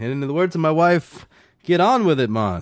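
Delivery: put-on Jamaican accent. Quoting the Jamaican mayor's speech from the movie, Jamaican accent. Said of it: "your jamaican accent is like spot on".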